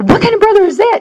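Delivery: high, fast, shocked and incredulous voice.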